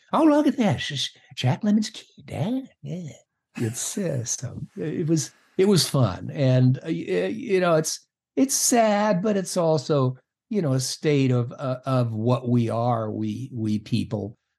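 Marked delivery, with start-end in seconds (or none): 0.1-3.1 put-on old film star voice, swooping high. Imitating a father who does an impression of Jimmy Cagney: Jimmy Cagney impression. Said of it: "doing Jimmy Cagney".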